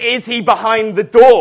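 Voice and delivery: very loud, high-pitched searching call. Retelling searching for a hiding young boy, acting out loud searching. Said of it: "I would loudly be searching".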